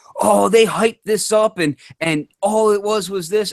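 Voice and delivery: very high, screaming angry outcry. Describing the community's angry reaction to an announcement, imitating people screaming. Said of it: "many people were were screaming".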